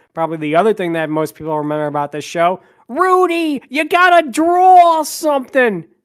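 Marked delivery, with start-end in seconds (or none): 2.9-5.9 bad squeaky cartoon voice, very high, very slow. Recapping a cartoon show and quoting a character's iconic catchphrase: terrible Snap impression. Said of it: "terrible, terrible impression".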